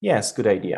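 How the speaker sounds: flat, bored, unenthusiastic tone. A teacher contrasts two ways of saying a reply, flat, uninterested tone. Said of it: "Which one sounds more interested?".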